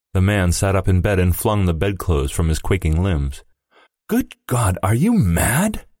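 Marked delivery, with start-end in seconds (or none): 4.0-5.8 high, swooping, horrified, appalled outcry. Reading a man sitting up in bed answering his wife's demand, crying out aghast. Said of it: "he cried aghast".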